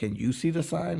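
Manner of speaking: very high, loud scream. Retelling screaming back at a man yelling about signs, retelling a scream. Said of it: "I screamed back at him like".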